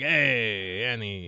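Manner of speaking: alien trader voice with drawn-out "hey". Imitating the flying alien junk keeper from Star Wars: Watto impression. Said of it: "based on that impression alone".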